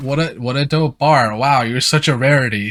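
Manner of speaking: dry, flat, deadpan sarcastic tone. Demonstrating the tone of a sarcastic compliment, in a flat, sarcastic tone. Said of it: "the tone... it's so flat... just leaking sarcasm".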